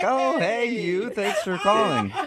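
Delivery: amused, giggly delivery. Imitating how the caller answers unknown calls, imitating a laughing greeting. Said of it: "you kinda laugh and are like".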